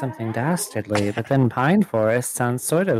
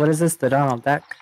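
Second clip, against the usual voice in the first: usual speaking voice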